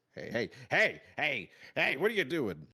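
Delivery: put-on agitated, riled-up old man voice, loud and shrill. The storyteller voices the old fellow who turns and sees you: riled-up old man. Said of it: "as he's getting ri- you know riled up".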